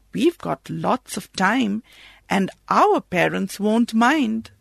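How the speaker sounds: ordinary delivery, nothing marked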